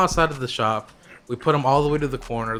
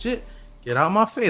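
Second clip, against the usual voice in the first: acted, heated, worked-up, pitched-up comeback tone; 7 semitones higher than usual. Retelling an argument with a customer, imitating own heated reply. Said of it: "I'm getting a little bit heated at this point".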